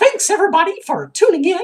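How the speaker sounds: very high, squeaky, loud cartoon voice. Saying they talk like Mickey Mouse, then doing it: Mickey Mouse voice. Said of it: "I talk like Mickey Mouse ... I won't be doing the rest in this voice".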